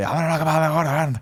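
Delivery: high-pitched put-on Irish accent. Talking about an upcoming fight, quoting Conor McGregor: Conor McGregor impression. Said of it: "That's pretty good".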